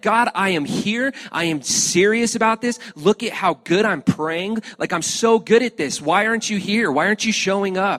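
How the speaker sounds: mad, exasperated pleading. Speaker retelling a night of praying with no answer, imitating a frustrated prayer. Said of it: "And I got so frustrated, so mad".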